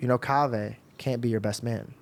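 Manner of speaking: usual speaking voice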